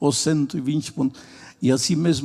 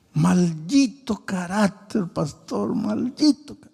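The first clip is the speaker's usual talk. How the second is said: put-on crying, high and tearful, words through tears; 5 semitones higher than usual. A pastor retells an old man's words after church, imitating someone crying.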